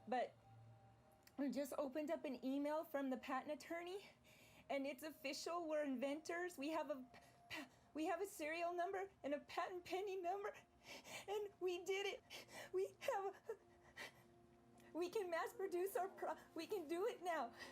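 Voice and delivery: tearfully nervous, crying a little. Speaker calls an uncle with news from the patent attorney, crying a little and nervous. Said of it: "I'm crying a little bit".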